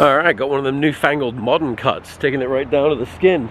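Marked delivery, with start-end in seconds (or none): none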